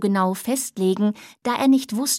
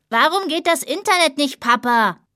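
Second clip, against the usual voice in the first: put-on loud child's voice, shouting; 4 semitones higher, 3 dB louder than usual. A child yells to their father from inside the house; shouting. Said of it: "Die eine schrie".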